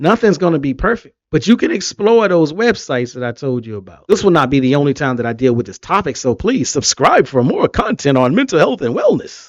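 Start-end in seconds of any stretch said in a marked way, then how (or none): 6.2-9.5 swooping radio commercial announcer voice. Asking viewers to subscribe for more content, in a commercial announcer voice. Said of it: "in my commercial voice".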